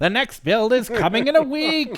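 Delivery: very high, very loud booming voice. Joking about the next build's release date in a Skeletor voice. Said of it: "That's much more Skeletor".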